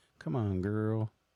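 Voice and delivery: sassy, self-encouraging tone. Showing a mirror pep talk with a head shake: sassy pep talk to the mirror. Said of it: "all sassy".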